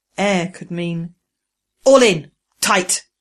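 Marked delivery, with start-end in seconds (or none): 1.9-3.1 firm, insistent, loud, demanding. Narrator reading Pro-Am ordering the wreckers through the hatch: demanding. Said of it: "Pro-Am demanded".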